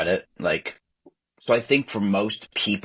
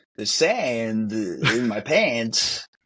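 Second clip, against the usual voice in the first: put-on odd, halting movie-star voice, pitched higher; 3 semitones higher than usual. Showing a friend the Walken impression tried during the movie: Christopher Walken impression. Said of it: "I was trying to do a Walken impression".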